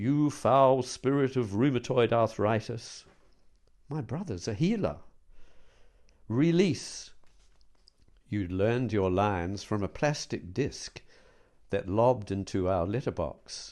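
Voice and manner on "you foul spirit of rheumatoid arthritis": resonant American preacher voice, pitched up. Retelling a brother's bedtime healing act: imitating a booming American preacher. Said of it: "A sonorous voice, a booming American preacher".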